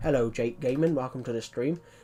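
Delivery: own home accent, laid on thick and heavy. Greeting viewers on a stream, showing a thick version of own accent. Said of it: "This is generally how people talk in my accent".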